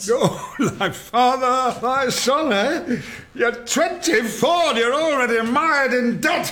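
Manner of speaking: shouting. A father responds to his son Charles, shouting. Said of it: "You are shouting again".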